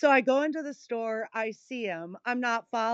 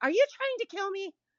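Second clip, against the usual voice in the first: very high, exaggerated, outraged and indignant squealing voice; 10 semitones higher than usual. Doing a voice for a listener, mock-indignant Karen voice. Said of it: "I've got the Karen voice down when I want to".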